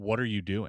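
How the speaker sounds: very stern woman's voice. Retelling a voice heard right behind their head, the speaker quotes it: imitating a stern female voice. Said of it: "very in a very stern tone".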